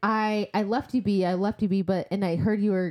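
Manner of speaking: ordinary delivery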